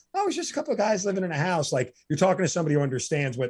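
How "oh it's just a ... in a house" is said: put-on offhand, casual nonchalance, pitched up. Repeat back to the other person how they describe those guys, imitating someone's nonchalant delivery. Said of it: "you say it with so nonchalant".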